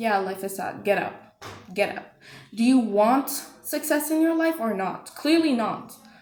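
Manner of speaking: blunt, rough, harsh, no-nonsense tone. Urging the listener to stop playing the victim, talking rough. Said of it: "I'm sorry for talking rough like this".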